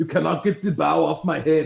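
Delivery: put-on Austrian accent. Voicing a tree character for kids, doing an Arnold Schwarzenegger Austrian accent. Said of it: "I had the tree do my best Arnold Schwarzenegger impersonation".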